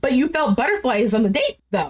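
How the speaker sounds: ordinary talk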